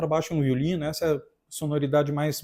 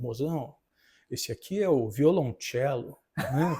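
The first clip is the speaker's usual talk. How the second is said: mock over-careful fancy enunciation, lower and slower; 3 semitones lower, 4 dB quieter than usual. Retelling what a man says to his girlfriend at a restaurant, mock-showy over-careful pronunciation. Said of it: "Capricha na pronúncia".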